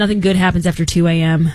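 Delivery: ordinary delivery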